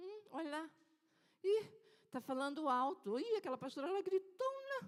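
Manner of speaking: hushed, sniffy, nose-turned-up, disdainful tone. Preaching about people who scoff at others' faith, mimicking disdainful gossip. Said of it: "Torce o nariz quando alguém".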